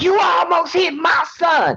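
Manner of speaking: long, very high, shrill drawn-out scream. Retelling what a woman on the porch yelled: imitating someone screaming. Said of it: "screams out".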